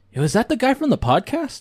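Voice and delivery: high, surprised call with wide-ranging pitch.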